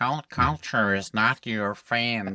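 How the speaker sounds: very slow, deliberate, every word drawn out. Speaker adapts a line in Terence McKenna's voice: Terence McKenna voice. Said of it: "McKenna's voice".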